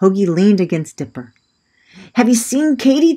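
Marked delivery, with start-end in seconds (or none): 2.1-3.1 very high, breathless, winded spluttering. Narrator voicing a character who has just arrived running, asking about someone, sputtering. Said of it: "Hoagie sputtered".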